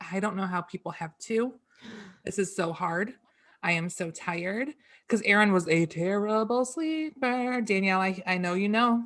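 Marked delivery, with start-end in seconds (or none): 0.1-4.7 re-enacted crying voice. Retelling words once said to mom on the couch: re-enacting own past crying. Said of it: "sitting on my mom's couch crying".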